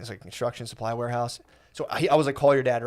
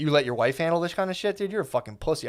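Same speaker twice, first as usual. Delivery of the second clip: put-on hot-headed, furious rant, pitched up; 5 semitones higher than usual. Retelling a phone argument with the dad, imitating his own angry words. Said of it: "at this point, I'm hot, dude".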